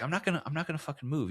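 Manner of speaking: hushed, half-voiced stage whisper. Retelling a woman at the bar refusing to move: imitating someone half-whispering. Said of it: "kinda whispering to us".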